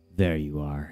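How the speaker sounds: low, quiet mutter under the breath. Atticus finding the body he tracked, muttered. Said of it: "he muttered".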